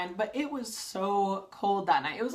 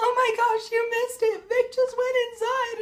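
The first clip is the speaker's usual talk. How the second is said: very high, frantic, play-acted starstruck fangirl freak-out; 5 dB louder than usual. Retelling missing vic going inside with a friend, imitating a fangirl freak-out. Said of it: "freaking out like a total fangirl".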